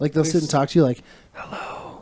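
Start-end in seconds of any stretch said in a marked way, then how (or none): 1.3-2.0 much softer, toneless creepy ASMR whisper. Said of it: "a lot of it's, like, whispering".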